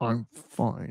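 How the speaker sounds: forced out through clenched teeth. Giving bad advice on air, the speaker shows replying through gritted teeth. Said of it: "please respond with gritted teeth".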